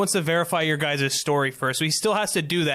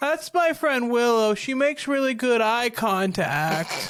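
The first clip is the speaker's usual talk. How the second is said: high character voice in head voice; 7 semitones higher than usual. A reanimated severed head introduces its friend Willow; higher-pitched head voice. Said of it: "Okay, so they'll cast Speak with the Dead, and then the head will kind of like, hi, I'm [name]. / He's staring straight at [name]. / I think he was a little bit higher pitched than that, ... I think h".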